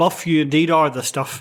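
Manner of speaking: totally deadpan, dry, expressionless delivery. Retelling how Gene answered Buff, retelling a deadpan reply. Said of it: "totally deadpan".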